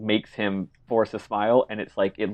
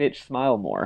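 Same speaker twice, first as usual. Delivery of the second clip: ordinary talk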